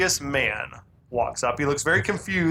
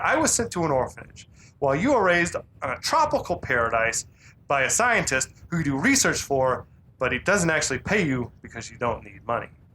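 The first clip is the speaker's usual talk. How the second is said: sarcastic, mocking tone. Speaker recapping a scene, retelling a character's sarcastic recap. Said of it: "recapping what he's just been told in this like sarcastic way".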